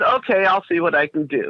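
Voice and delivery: put-on dry, half-sarcastic, grudging tone. Retelling a reply to a voice from the TV: imitating own sarcastic reply. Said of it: "kind of sarcastic again".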